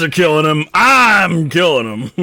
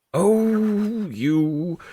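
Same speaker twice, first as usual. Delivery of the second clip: put-on elderly dwarf voice with oh stretched long; 4 semitones higher, 7 dB quieter than usual. Speaking as an old dwarf character in a story, in an old voice. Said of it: "you hear an old voice".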